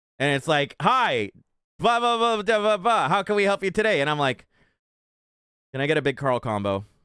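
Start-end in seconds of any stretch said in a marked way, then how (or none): 0.8-4.0 canned, automated, machine-like voice. Retelling ordering at a drive-thru, imitating the automated drive-thru voice. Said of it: "the automated voice comes back".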